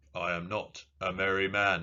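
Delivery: slow, very firm, measured delivery. Reading a quiz answer as a quote in a Worf impression. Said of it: "It's another Worf impression".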